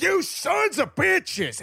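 play-acted shrill, ragged, furious scream, very high. Retelling a mob around two guys, imitating its angry screaming at them. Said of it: "and just screaming at them".

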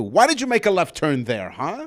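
put-on GPS voice with attitude. On a show, a co-host imitates the host's female-sounding GPS: mock GPS voice with attitude. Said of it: "and with attitude, too".

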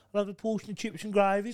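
put-on squeaky, very high-pitched Brummie Birmingham accent. Imitating a guy from birmingham he knew as a kid: imitated birmingham accent. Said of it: "he was from Birmingham. He used to go".

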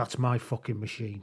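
fake menacing tone. Retelling what a backseat gambler said at the machine, mock-menacing. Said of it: "says menacingly".

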